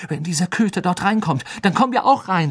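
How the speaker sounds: panting, out of breath. Harry tries to get past a lashing tree with a companion, panting. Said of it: "keuchte Harry".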